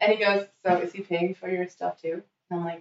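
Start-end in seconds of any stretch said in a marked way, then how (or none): none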